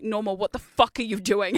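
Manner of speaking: mock-aggressive chatter. Retelling what a chatter said during a live stream: imitating Broken Screen, aggressive. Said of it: "I wasn't that aggressive".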